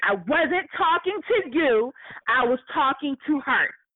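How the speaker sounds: mild, half-shouted, dismissive, snubbing tone. Retelling what a woman yelled at the speaker's friend, retelling a yell. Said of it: "she yells".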